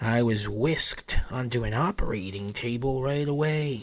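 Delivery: ordinary delivery, nothing marked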